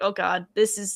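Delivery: ordinary delivery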